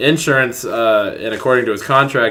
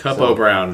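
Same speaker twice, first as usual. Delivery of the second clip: normal talking voice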